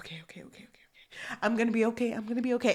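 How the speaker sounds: put-on heavy breathing. Retelling how a character calmed himself: imitating heavy breathing to calm down. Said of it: "he was breathing and he was like".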